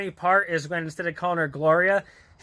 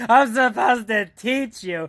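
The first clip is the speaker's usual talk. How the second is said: put-on drunk slurring voice, higher; 4 semitones higher than usual. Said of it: "impression of how Jack does it to Larry when he's drunk".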